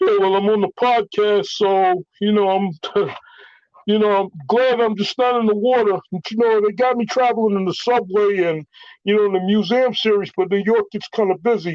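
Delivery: goofy high cartoon voice. The speaker demonstrates a character he made up, Murray's funny voice. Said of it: "he's got a funny voice. I'll give you a quick demonstration".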